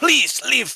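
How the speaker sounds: very high, loud yelling. Voicing a trader who grabs a scimitar and orders visitors out: shouting. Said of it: "Starts shouting at you".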